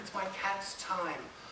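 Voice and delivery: discreet, very quiet half-whisper. Retelling quietly telling the receptionist why you came: imitating a half-whisper. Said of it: "I can whisper to her".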